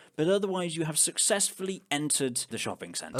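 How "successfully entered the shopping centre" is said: normal talking voice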